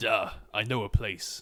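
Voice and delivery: deliberately assumed deep character voice. Trying to impersonate a character's line for others: deep character voice. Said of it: "it in a deep voice on purpose?".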